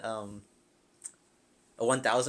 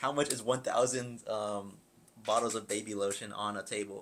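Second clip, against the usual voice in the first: plain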